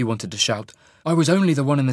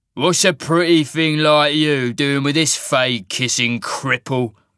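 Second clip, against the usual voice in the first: words growled out; 3 dB louder than usual. The largest of a group of leering men taunts a couple, growling. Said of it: "The largest of the men growled".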